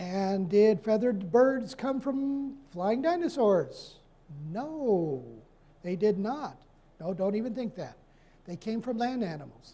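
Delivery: dripping, heavily sarcastic delivery. Explaining whether feathered birds came from flying dinosaurs, very sarcastic. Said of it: "I know I'm sounding very sarcastic".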